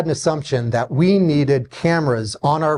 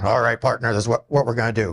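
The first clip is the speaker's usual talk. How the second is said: big, deep, growly big-man voice; 4 semitones lower, 3 dB quieter than usual. Retelling how an ex-Navy SEAL security guy talked: imitating a big growly voice. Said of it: "he had a big growly voice".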